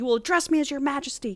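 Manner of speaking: furious, high-pitched tone. Recounting a scene from a story: retelling a livid king's line. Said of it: "He's fucking livid".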